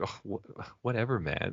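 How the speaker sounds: slow, put-on disappointed, underwhelmed tone. Retelling how Bart Simpson reacts after being yelled at: imitating Bart Simpson sounding disappointed. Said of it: "he's, like, disappointed or whatever".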